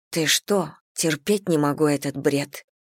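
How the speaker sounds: usual speaking voice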